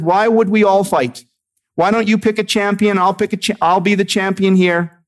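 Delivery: mocking jeer. Retelling a giant's challenge to the opposing army: imitating a mocking taunt. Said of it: "he said it very mockingly".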